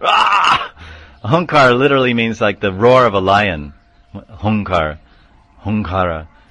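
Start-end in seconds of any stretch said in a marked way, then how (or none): 0.0-0.7 very high sudden startling cry. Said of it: "all of a sudden they say".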